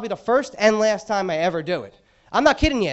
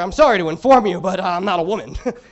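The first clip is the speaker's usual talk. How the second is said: put-on reply with sarcasm laid on thick; 2 semitones lower than usual. Retelling his reply to a woman in the perfume section, retelling a sarcastic reply. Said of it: "I said real sarcastically back to her".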